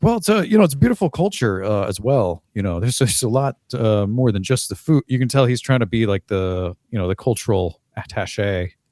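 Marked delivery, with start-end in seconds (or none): 0.0-5.0 halting, hedging, would-be diplomatic delivery. Acting out a talk-show guest praising a culture: Fred Willard impression. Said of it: "he's like".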